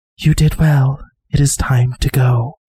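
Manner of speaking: whispered small creature voice. A man-sized moth lands on you, its face next to yours: moth's whisper. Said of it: "and it whispers".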